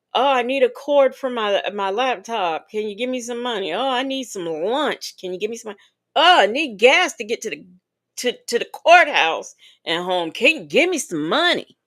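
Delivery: needy, pleading, begging voice. Mocking people who ask viewers for money: imitating someone begging. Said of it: "we are not begging like".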